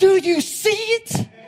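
drawn-out shriek, very high-pitched and very loud. Retelling asking a little boy whether he sees it: retelling a scream. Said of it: "So I start screaming at him".

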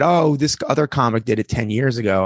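normal talking voice

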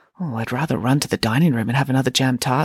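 plain reading voice

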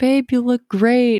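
slow, high-pitched mocking voice.

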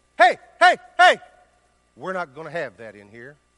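very loud, booming authoritative shout with swooping pitch. Retelling the moment of stepping in, reenacting an authoritative voice. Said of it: "in my most authoritative voice possible".

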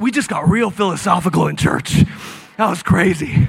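out of breath. Commenting on the sermon in church, out of breath. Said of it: "I'm so out of breath right now".

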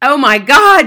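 very loud, startled yell at full volume. The father stares into the little mirror, yelling. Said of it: "the father yelled".

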